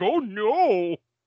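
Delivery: high, drawn-out zombie groan. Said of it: "the voice in my head for the zombies".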